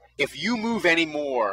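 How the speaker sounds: ordinary delivery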